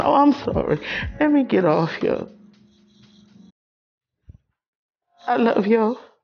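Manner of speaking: tearful voice, crying through the words. Signing off to viewers after sharing hard family news: crying while signing off. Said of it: "I just can't stop crying".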